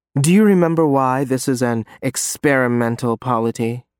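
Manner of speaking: ordinary delivery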